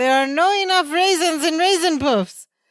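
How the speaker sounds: high, eager voice. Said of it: "he says".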